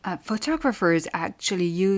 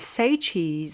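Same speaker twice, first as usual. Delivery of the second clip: ordinary talk, nothing marked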